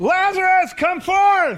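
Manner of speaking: very loud, very high preacher-style holler. Speaker retells the command to lazarus where people were buried: retelling a loud shout. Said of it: "He said it with a loud voice".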